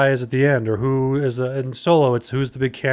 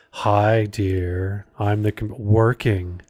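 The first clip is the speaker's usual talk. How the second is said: put-on sultry computer voice, lower; 4 semitones lower than usual. Imitating the Enterprise computer after it was changed: Enterprise computer's sexy voice. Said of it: "they changed it to be like".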